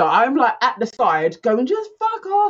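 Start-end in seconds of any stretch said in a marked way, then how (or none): 1.7-2.5 very high, shrill, dismissive shout. Retelling telling a neighbour at the door to leave: imitating own shout. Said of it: "Then I literally shouted".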